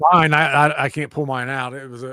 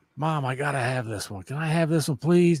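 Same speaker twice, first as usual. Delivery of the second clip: pleading, begging tone, quieter; 4 dB quieter than usual. Retelling begging mom for a book as a kid: imitating own childhood begging. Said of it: "I just was begging her for it".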